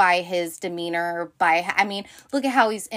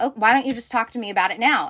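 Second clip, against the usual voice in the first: put-on nasty voice, higher pitch; 3 semitones higher than usual. Retelling how Ken gets with Jess at the funeral: imitating Ken being nasty to Jess. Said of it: "he gets really shitty with Jess".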